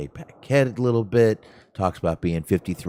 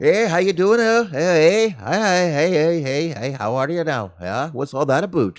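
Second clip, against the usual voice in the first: very high pitched, laid-on fake Canadian accent; 9 semitones higher than usual. Speaker imagines Mercedes Monet coming out, doing her fake Canadian accent. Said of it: "talks in a fake Canadian accent".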